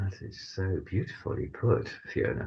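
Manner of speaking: very quiet, indistinct, whispered, breathy mumbling. Praising how Fiona put it, mumbling. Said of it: "Sorry, I'm mumbling".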